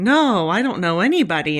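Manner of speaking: playful coy tone, rattled off fast. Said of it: "Nate playfully starts going".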